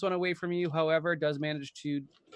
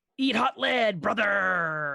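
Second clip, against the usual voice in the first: gruff wrestler battle cry, loud and high; 5 semitones higher, 5 dB louder than usual. The talking gun yells out as the player shoots, gruff Hulk Hogan yell. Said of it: "He's trying to do a gruff voice".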